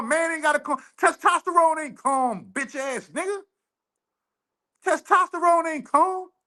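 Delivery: angry, worked-up, high-pitched shouting. Told to calm down, the speaker refuses with heated shouting. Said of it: "I don't gotta calm down".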